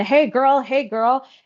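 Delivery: mock, high-pitched screaming call. Retelling a person running toward the speaker: imitating someone screaming. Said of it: "this person starts g-, screaming".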